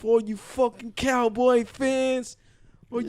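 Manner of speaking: tearful, cracking voice. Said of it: "his voice is cracking and everything".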